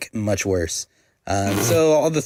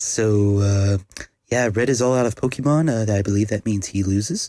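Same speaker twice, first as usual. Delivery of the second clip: slower, calm, mock golf announcer commentary voice. Commentating a Pokémon battle as a joke: mock golf announcer commentary. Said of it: "just do like a golf announcer".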